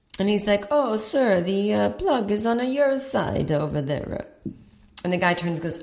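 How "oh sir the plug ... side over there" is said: put-on speaking with Italian accent. Retelling what a flight attendant said about the plug: Italian accent. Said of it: "like, an Italian accent".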